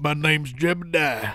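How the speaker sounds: put-on Southern accent. Getting fully into character with a put-on Southern accent. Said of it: "when I start my Southern accent".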